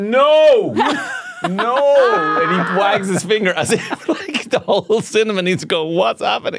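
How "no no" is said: play-acted loud, high, long, stretched, drawn-out shout. Recounting how Dermot shouts at her in a cinema: retelling Dermot's shout. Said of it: "he just shouts out his voice".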